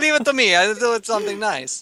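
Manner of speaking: sudden, high, put-on Italian accent. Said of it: "Why did his accent suddenly change?".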